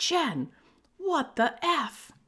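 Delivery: play-acted shrill, very slow, very high yell. Retelling the girlfriend's reaction after they got rear-ended, retelling a yell. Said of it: "but she's yelling".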